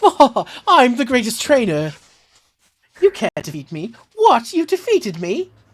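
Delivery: very high, swooping, put-on British accent. A voice actor tries out a possible accent for a character: British accent. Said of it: "possible British accent I could do".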